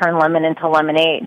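ordinary delivery

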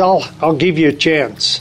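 normal talking voice

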